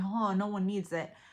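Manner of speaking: usual speaking voice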